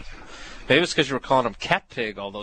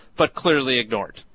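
ordinary delivery

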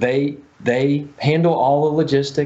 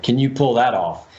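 scornful, mocking delivery; 3 semitones lower than usual. Retelling own reply when asked how many were needed: retelling a mocking tone. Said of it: "kinda mocking him".

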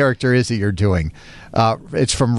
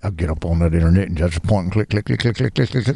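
put-on mumbling voice, much lower; 7 semitones lower than usual. Recalling Hank Hill's neighbor who always mumbled, doing a mumbling Boomhauer impression. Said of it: "his neighbor that always mumbled".

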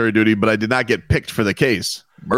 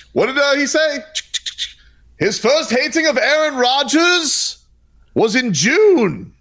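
sudden, very high-pitched, put-on English accent; 14 semitones higher than usual. Imagining how the other speaker talks in a courtroom, switch to a put-on English accent. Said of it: "all of a sudden have to go to English accent".

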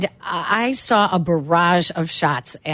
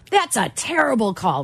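blunt, mock griping, complaining tone; 4 semitones higher than usual. Retelling an opponent's complaint about a tennis call: imitating a loud complaint. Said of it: "really loud".

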